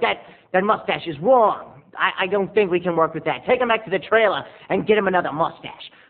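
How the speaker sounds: put-on New York accent. Retelling a film director's complaint on set: New York accent. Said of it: "he had that kind of New York accent".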